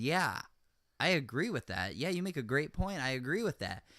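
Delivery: ordinary talk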